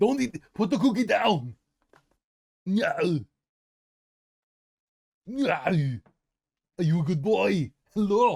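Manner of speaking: very high, loud shouting. Calling out to Teddy, who loves this voice, speak in an Arnold voice. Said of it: "He loves the Arnie".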